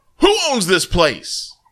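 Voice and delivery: play-acted yell. Retelling how he stuck his head in the door, imitating someone yelling. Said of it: "He opens the door and sticks his head in and yells".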